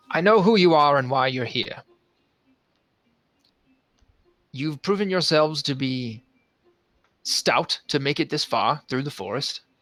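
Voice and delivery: voice calling out from another room, distant. Game master voices Xantor calling out to the players from the room: Xantor calling out. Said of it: "Xantor he kind of calls out to you from the room".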